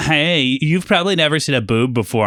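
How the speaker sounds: needling, mocking, taunting tease. Retelling how pretty girls teased him as a nerd, imitating a teasing girl. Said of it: "they'd be like".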